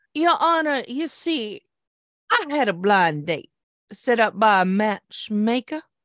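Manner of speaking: put-on slow, good old Southern drawl. Joking that every lawyer should address the court this way, the speaker does a good old Southern lawyer voice. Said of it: "speak like a good old Southern lawyer".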